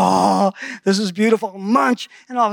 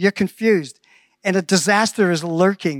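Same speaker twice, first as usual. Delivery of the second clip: normal talking voice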